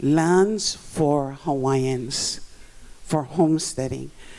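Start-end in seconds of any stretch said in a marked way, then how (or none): 0.0-2.4 LANDS stressed, drawn out very slow. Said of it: "emphasis on lands".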